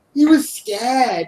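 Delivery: half-managed British accent. Speaker retelling a story, trying a British accent he can only partly do: attempted British accent. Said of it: "I can do some of it".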